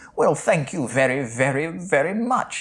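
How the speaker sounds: weird, bad, fake British accent. Act out Rip Torn thanking a waiter for directions to the bathroom, in Rip Torn's weird fake British accent. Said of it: "in a weird fake British accent".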